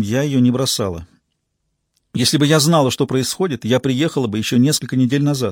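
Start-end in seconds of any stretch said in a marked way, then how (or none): none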